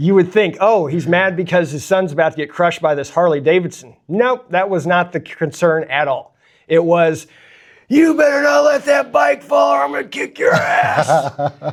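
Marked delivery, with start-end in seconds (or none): 7.9-11.6 put-on shrill, very high, angry voice. Retelling the dad's warning as his son struggled under a Harley, imitating an angry dad. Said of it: "my dad being so mad".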